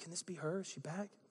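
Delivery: very soft, gentle, wondering, rising tone. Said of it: "you see the inflection that I used?".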